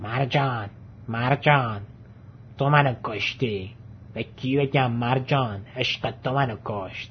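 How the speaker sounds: scratchy, raspy street-tough voice. A caged parrot suddenly speaks to the person watching it, in a raspy tough-guy tone. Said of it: "با لحن خراشیده ای گفت".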